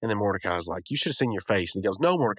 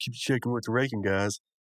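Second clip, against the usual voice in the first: ordinary talk, nothing marked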